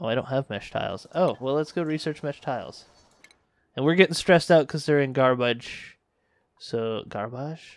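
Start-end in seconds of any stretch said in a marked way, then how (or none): 6.6-7.8 slow, oddly stretched, weirdly said word. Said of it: "Why'd I say it so weirdly?".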